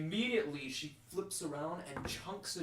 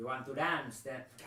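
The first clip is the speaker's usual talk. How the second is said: put-on French man's accent, in character; 2 semitones lower than usual. Voicing a character who dodges a pike thrust and taunts: French accent. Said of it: "French man".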